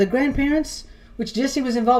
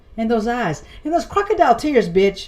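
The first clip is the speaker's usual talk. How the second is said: ordinary talk, nothing marked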